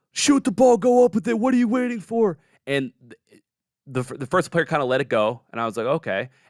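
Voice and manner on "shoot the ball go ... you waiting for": very high, very loud screaming. Telling a game story, the speaker voices the coach at his player, retelling a coach screaming. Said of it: "his coach starts screaming at him".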